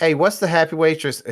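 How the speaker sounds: put-on Pennsylvania accent. Retelling what a guy in the group asked the waitress, Pennsylvania accent impression. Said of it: "Please excuse my impression of his accent".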